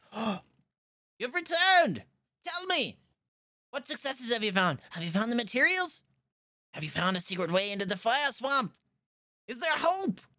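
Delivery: eager, excited gush, very high-pitched and swooping. Voicing the mayor as the adventurers return with news: excited mayor greeting returning heroes. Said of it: "He turns around. He's like".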